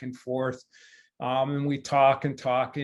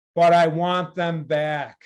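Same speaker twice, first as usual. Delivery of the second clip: big, booming, declaiming voice; 3 semitones higher, 4 dB louder than usual. Recalling what he said as he turned around, imitating a booming voice. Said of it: "with his booming voice he".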